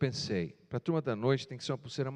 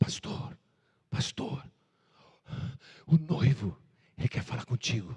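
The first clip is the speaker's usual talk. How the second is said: put-on breathless, panting, out-of-breath speech; 4 dB louder than usual. Retelling how someone arrived to fetch the pastor: imitating someone out of breath.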